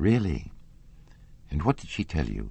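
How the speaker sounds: ordinary delivery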